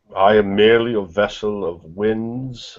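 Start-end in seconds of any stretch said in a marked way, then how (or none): 1.9-2.7 heavy stress placed on winds. Character in a role-play scene speaking, with stress on winds. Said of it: "I stress the word winds".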